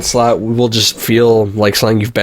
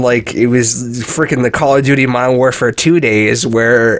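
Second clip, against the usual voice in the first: ordinary talk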